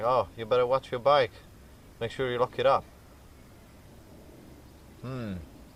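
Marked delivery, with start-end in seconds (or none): none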